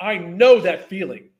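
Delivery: choked-up voice, caught with emotion. Speaker recalls asking his wife for help: getting choked up. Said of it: "I'm sorry I'm getting choked up".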